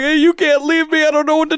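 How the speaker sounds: acted tearful voice. Retelling a drunk phone call home: imitating own crying on phone. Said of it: "So I'm calling Hayden crying".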